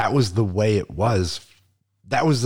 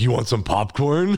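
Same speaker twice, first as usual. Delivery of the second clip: creepy, acted-out host voice; 3 semitones higher than usual. Retelling offering popcorn to people who come over: creepy popcorn voice. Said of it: "creepy popcorn voice".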